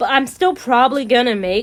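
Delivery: ordinary delivery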